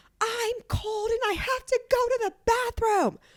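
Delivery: play-acted, very high, drawn-out wailing scream. Retelling the customer suddenly screaming about needing the bathroom: imitating someone screaming. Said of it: "she just starts screaming".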